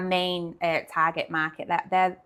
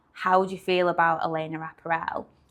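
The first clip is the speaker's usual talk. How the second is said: usual speaking voice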